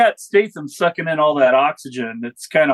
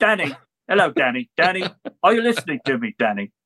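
put-on cockney accent; 3 dB quieter than usual. Discussing a movie, a speaker acts out an actor's line: Hugh Grant's Cockney accent. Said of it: "the Cockney accent that he, like, fronts".

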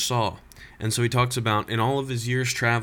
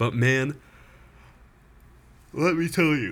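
talking through a yawn, pitched higher; 3 semitones higher than usual. Near 1 o'clock at night, listing favorites, the speaker is yawning. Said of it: "sorry, I'm yawning".

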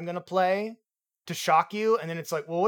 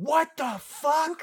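sudden acted, high, really loud scream; 8 semitones higher than usual. Recounting reacting aloud to a scene while the wife slept: retelling a really loud scream. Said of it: "I screamed".

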